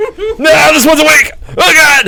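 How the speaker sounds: high, loud panicked shout. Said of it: "He's like".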